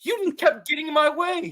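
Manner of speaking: put-on yell. Retelling a fight scene, yelling at the other character: retelling a yelled line. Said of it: "I'm yelling at him".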